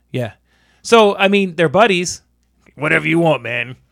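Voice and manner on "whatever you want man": put-on New York accent. Trying out an impression in conversation: attempted Stallone impression. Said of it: "that's somebody from New York".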